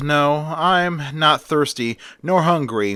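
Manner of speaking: usual speaking voice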